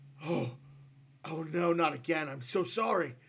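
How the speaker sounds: loud, startled, flustered tone. Voicing a character who snaps out of it mid-attack: startled, apologetic character. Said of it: "He kinda shakes it off as he's about to lay into you".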